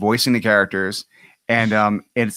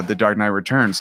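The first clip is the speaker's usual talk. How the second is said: ordinary talk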